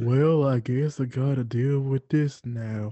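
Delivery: low, glum, defeated cartoon donkey voice. Acting out Eeyore after his tail falls off: Eeyore voice. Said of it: "He's like".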